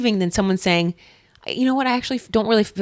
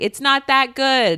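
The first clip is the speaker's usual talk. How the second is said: acted, slow, drawn-out half-yell; 4 semitones higher than usual. Retelling what gets said through a hotel wall: imitating own yelling. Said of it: "I am yelling something like".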